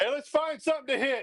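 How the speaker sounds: very high, loud shout. Calling a baseball game on air, yelling out mid at-bat. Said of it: "Sorry for yelling in your ear there".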